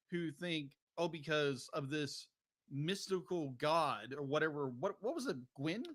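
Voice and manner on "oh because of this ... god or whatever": plain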